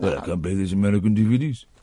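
put-on very low-pitched, deep Scottish accent. Imagining Gordon Brown failing to play American DVDs: Gordon Brown impression. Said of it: "where's he from?".

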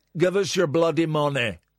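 mock Irish rock-singer voice. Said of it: "it was going towards [name]".

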